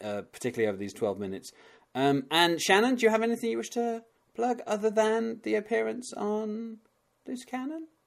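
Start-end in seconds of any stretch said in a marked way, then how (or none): 1.9-7.9 voice climbing way up high, pitched up. A host asks a guest what they want to plug, voice rising high. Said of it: "I don't know why I'm getting up so high".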